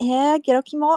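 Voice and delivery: girlish put-on voice. Showing how a girl would actually say it, in a put-on girly voice. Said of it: "I'm gonna do a voice, ... if a girl were to actually say it, she'd be like".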